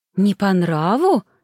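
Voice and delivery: frightened, startled, alarmed reaction. Reacting as the young lady hesitates over the dish she served, startled and frightened. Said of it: "испуганно вскинулась".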